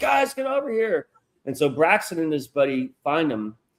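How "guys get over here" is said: put-on very high, shrill, urgent yell. Retelling a friend calling the others over: imitating someone yelling. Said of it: "he's yelling".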